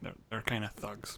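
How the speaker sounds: hushed, very quiet whispered aside. Narrating a character who hopes the guard at the door won't hear; whispered. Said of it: "he kind of whispers this bit".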